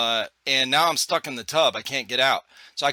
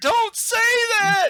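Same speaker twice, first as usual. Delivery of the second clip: acted, bawling, very high-pitched tearful crying; 3 dB louder than usual. Retelling his wife's reply after his ventilator joke: imitating someone crying. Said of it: "She fucking starts bawling".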